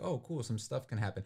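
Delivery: ordinary talk, nothing marked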